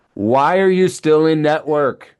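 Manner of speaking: loud, high-pitched, acted-out yell. Challenging providers unhappy with insurance reimbursement, yelling. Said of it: "I'm yelling this over here".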